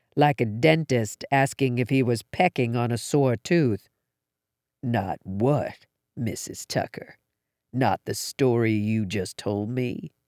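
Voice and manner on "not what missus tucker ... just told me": low, searching, probing tone. A man questions a mother at her house, low and probing. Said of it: "Drake's voice was low and probing".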